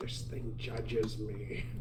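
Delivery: soft half-whisper muttered under the breath. Game master voices a character's aside, half-whispering to himself. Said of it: "you'd hear him whisper".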